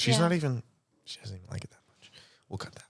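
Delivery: soft whisper kept under the breath. Making an aside about someone present in the room: whispering. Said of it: "You didn't have to whisper that".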